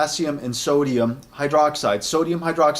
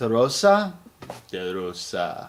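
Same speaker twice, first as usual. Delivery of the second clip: low, best-attempt put-on Italian accent; 5 semitones lower than usual. Speaker pronounces a shaving soap's Italian name: best Italian accent. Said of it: "It's my best Italian accent".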